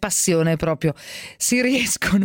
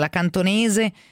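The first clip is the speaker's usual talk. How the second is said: ordinary delivery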